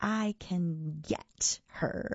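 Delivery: hissed, dragged out very slowly. Narrator reads a tentacled creature's reply to the speaker's question, hissed. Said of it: "he hissed".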